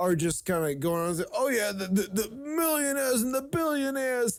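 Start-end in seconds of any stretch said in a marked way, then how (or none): 1.3-4.4 put-on Brooklyn accent, much higher pitched. Criticizing a long-serving politician, mocking his talk with a Sanders impression. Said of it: "he talks in his Brooklyn accent".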